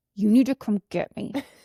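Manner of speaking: stern, furious, angry repeated insistence. Speaker retells calling her mom from the school office, retelling an angry demand. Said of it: "I was like that angry".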